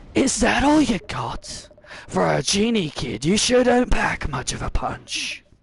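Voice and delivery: slow, put-on pirate voice. Showing the voice he uses for a pirate master, in a put-on pirate voice. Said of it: "my voice for a pirate master goes something like this".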